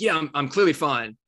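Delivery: cross, testy, irritated. Retelling his own past reply to his wife's question: imitating himself angrily.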